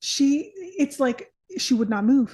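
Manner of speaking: ordinary talk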